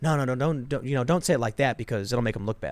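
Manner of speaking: usual speaking voice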